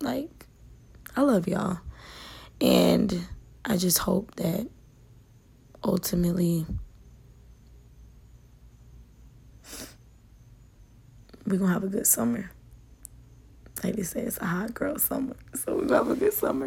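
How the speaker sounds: voice catching, choked up with emotion. Speaking to the audience, getting choked up. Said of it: "I'm getting choked up".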